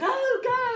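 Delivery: urgent yelling, high and loud.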